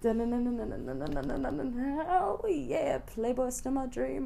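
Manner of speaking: very slow, creaky, sultry, seductive drawl. Over a soft drum from Jillian, saying it in a sexy voice. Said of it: "that's why I'm saying it in a sexy voice".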